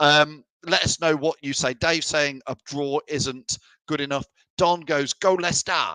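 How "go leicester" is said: put-on plain American-accented delivery. Reading out a viewer's comment: American accent, imitating Don. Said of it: "in his typical, uh, American accent".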